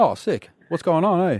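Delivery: put-on New Zealand accent. Chatting with a caller on the phone in a put-on kiwi accent. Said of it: "Why are you a Kiwi?".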